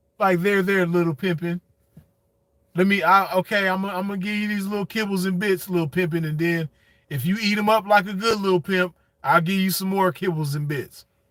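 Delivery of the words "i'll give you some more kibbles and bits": ordinary talk, nothing marked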